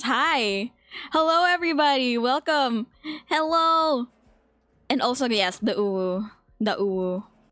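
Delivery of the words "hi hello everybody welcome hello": nervous, anxious voice. Welcoming everybody at the start after admitting genuine nerves: nervous greeting. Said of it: "I'm actually like genuinely nervous".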